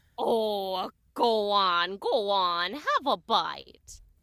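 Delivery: low, put-on storybook witch voice. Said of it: "And then a witch appears".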